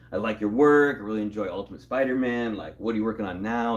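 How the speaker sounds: normal talking voice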